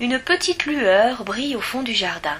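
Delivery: ordinary delivery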